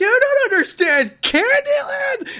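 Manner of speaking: very high, loud, impassioned, furious outburst. Retelling a party argument about a card game: imitating own furious rant. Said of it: "And I was so mad at him".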